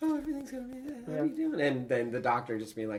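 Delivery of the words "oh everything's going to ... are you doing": very high, airy, breathy, flowery gushing voice. Contrasting two characters, imitating Kes: Kes's breathy, flowery voice. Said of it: "Kes and her breathy, like, flowery".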